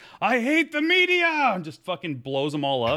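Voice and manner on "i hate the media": very high, loud, stretched-out alien scream. Retelling a cartoon scene where an alien charges camera crews, imitating an alien screaming. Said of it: "he just runs over and screams".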